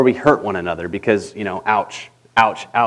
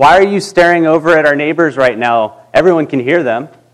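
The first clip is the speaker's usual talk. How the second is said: loud, blurted out, meant to be heard; 4 semitones higher, 4 dB louder than usual. Retelling what the oldest son asked about the neighbors: imitating son saying it loudly. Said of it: "And he said it really loud".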